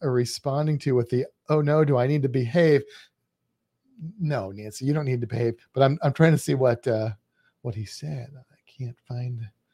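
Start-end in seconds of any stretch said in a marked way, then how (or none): none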